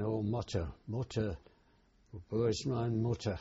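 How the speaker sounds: ordinary talk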